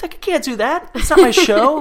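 mock panicked outburst. Acting out a wrestler told he'll headline the show, retelling someone freaking out. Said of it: "freaking out".

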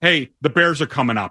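ordinary talk

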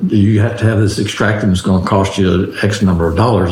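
normal talking voice

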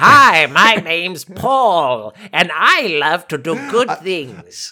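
loud, belted-out cartoon villain voice. Joking about Skeletor's backstory, doing a Skeletor voice. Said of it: "Does he start with the voice?".

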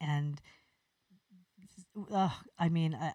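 stuttering, stammering speech. Praising one of the best shots ever seen, stuttering. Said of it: "I'm stuttering".

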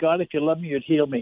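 usual speaking voice

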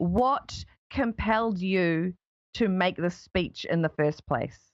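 slow, carefully paced, deliberate, unhurried voice. An interviewer asks a guest why they made the speech, speaking slowly. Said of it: "I'm trying to speak slowly".

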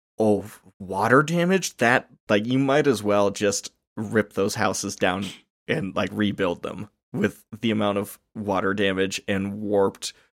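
normal talking voice

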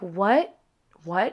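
normal talking voice

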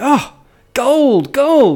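put-on young teenage voice, very high pitched. Voicing a teenager who finds gold: voicing a teenager. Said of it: "some sort of teenager say".

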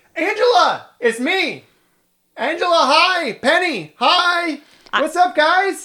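high, shrill, full-volume, top-of-lungs calling out. Narrating a scene, the speaker voices a character greeting another player's character: shouting at the top of his lungs. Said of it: "starts shouting at the top of his lungs".

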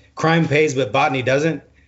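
ordinary talk

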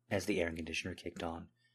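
plain reading voice

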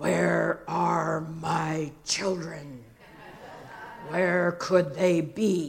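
deep, rumbling, grumbly voice. Recalling him coming home at bedtime while they hid; deep grumbly voice. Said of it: "in this deep, grumbly voice".

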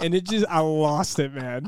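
ordinary talk

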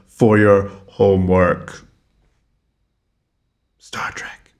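eerie, unsettling, creepy whisper. Podcast host assigning listeners episodes as homework, in a creepy voice. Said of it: "That was creepy".

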